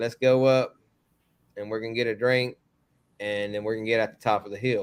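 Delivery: ordinary delivery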